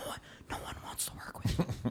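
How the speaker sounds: very quiet, soft whisper. Showing how a boss could quietly tell a worker: whispering. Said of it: "He can whisper it".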